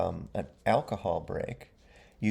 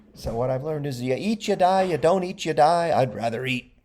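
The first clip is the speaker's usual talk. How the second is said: very gruff, loud, put-on Italian accent; 5 semitones higher, 5 dB louder than usual. Quoting what a man said, put on a very gruff, italian kind of voice. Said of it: "very gruff, like Italian kind of voice".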